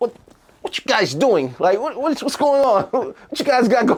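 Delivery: put-on very high-pitched, tough New York accent. Recalling the academy's bad cop, new york accent. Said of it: "New Yorker accent".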